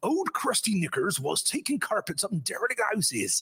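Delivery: put-on Somerset accent. Announcing that the next one has to be said this way, use a put-on Somerset accent. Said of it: "I'll put on my specialist Somerset accent".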